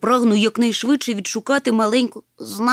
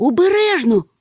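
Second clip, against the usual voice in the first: quick, sudden, high cry; 5 semitones higher, 4 dB louder than usual. Seeing the other rush at a teetering boulder, he cries out a warning. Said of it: "скрикнув Нюхмумрик".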